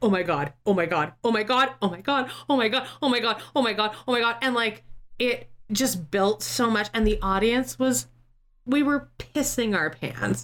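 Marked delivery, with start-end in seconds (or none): 0.0-4.4 put-on panicked pirate captain voice. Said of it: "five minutes of walking around the stage going".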